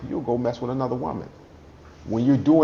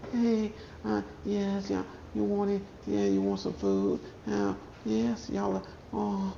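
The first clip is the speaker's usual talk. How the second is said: hushed, very quiet, soft woman's voice; 8 semitones higher, 10 dB quieter than usual. Describing a wife while her husband raises his voice, imitating a quiet woman. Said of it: "she's quiet".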